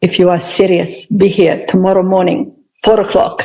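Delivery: put-on speaking with Hungarian accent. Retelling what the yoga teacher said to them: hungarian accent. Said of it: "in his gorgeous Hungarian accent".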